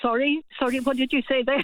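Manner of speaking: normal talking voice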